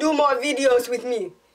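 bad Jamaican accent in an unusual timbre.

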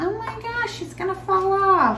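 high, hushed, worried, gasping grandma voice. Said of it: "they'll be like".

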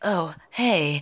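put-on meek, bashful, shy, timid nerdy girl voice. Showing how they voice different characters: shy nerdy girl voice. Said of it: "like a shy nerd girl, I'm like".

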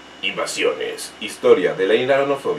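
low, dark, mystic, ominous tone. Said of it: "le estaba dando yo ahí un tono místico, oscurísimo".

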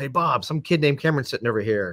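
ordinary talk

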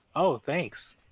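sarcastic delivery. Answering being called the best sniper: sarcastic. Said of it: "That sounded really sarcastic".

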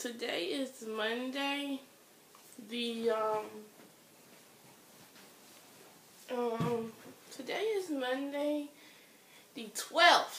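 muffled, swollen-face talking. Explaining the date after wisdom teeth removal, talking with a swollen face. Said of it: "the reason why I'm talking like this".

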